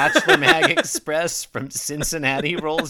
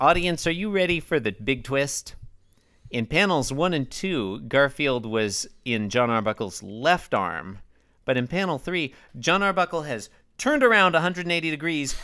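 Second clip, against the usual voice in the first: usual speaking voice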